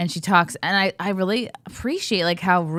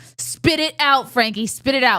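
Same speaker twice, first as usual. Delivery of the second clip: firmest stern mother voice, pitched up; 7 semitones higher, 4 dB louder than usual. A mother retells what she told Frankie, retelling her stern mom voice. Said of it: "I got my most stern mom voice I could muster".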